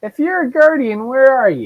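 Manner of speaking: tiny, very high-pitched, swooping gnome voice. The game master voices a gnome speaking from behind a door in a small gnome voice. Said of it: "You hear a small gnome voice".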